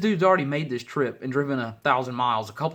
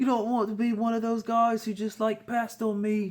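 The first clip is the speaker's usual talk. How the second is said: mocking, jokey, pitched-up put-on British accent; 9 semitones higher than usual. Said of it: "I guess 'cause Jonah Hill the other day".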